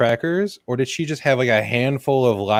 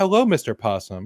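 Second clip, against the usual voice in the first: ordinary talk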